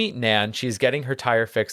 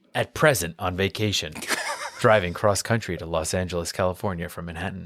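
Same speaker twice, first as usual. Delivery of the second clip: put-on TV narrator voice, lower; 4 semitones lower than usual. Reading an episode's opening narration aloud: Rod Serling voice. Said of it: "let me get into my Rod Serling voice".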